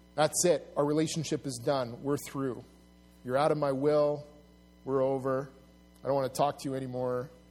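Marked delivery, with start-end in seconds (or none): none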